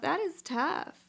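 tearful voice, crying through the words. Reacting to a woman's story, crying. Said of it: "i'm crying now i'm sorry".

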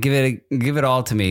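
usual speaking voice

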